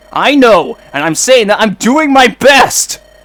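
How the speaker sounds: shouting angrily. Arguing with a companion about moving cautiously: shouting angrily. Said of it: "if you two keep shouting like that".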